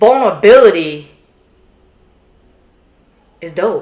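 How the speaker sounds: deliberate pause mid-phrase in "vulnerability is dope". Showing how the speaker always says this phrase, pause inside vulnerability is dope. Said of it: "I always do a pause and I say".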